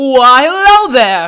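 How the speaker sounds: booming, very loud, high-pitched. Opening the very first episode of The Direction, very loud greeting. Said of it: "that was very loud".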